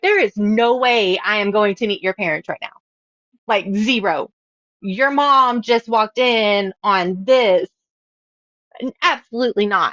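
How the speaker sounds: ordinary talk, nothing marked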